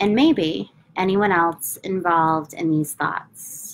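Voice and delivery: slow, unhurried, phrase-by-phrase delivery with long pauses.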